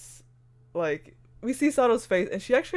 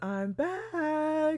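very high, creepy horror voice; 10 semitones higher, 4 dB quieter than usual. Retelling what Torigoya says when she appears: imitating Torigoya's creepy voice. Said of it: "kind of creepy, horror-esque response".

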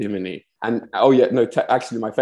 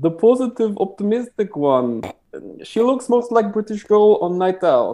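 high, over-the-top, exaggerated Russian accent; 10 semitones higher than usual. Retelling what a boyfriend kept saying: imitating boyfriend's russian accent. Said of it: "I'm gonna do a very offensive version of his accent now".

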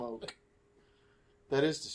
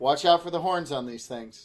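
plain

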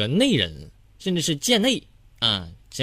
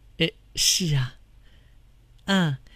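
mock stammering. Telling friends how the speaker blushed and answered back then, imitating own stammering. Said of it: "然后支支吾吾的说".

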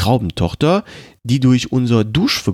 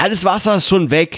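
high-pitched shouted voice; 7 semitones higher than usual. Reading a story, a young skinny man is shouting back at an older man. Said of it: "schrie ihm ein junger dürrer Kerl".

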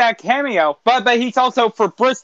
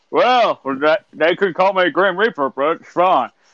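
put-on old politician voice, lower pitch; 4 semitones lower than usual. Wishing you could do more impressions and trying one out, do a Mitch McConnell impression. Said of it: "impressions, like Mitch McConnell".

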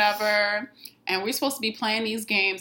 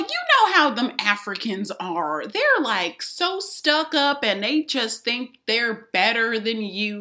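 terrible put-on Southern accent. Quoting a woman from the South, bad Southern accent. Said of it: "This voice that you're doing right now".

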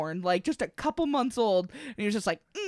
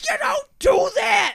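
imitated yell, higher and louder; 6 dB louder than usual. Retelling a mom scolding the babysitter: imitating mom yelling. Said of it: "yelling at the fucking babysitter".

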